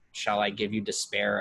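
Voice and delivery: ordinary talk, nothing marked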